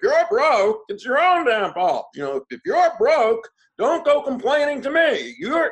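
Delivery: very loud, high, in-your-face barked rant. Imitating a speaker's stage manner, in your face: imitating Larry Winget. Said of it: "my imitation of Larry".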